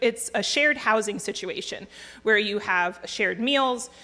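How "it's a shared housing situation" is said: usual speaking voice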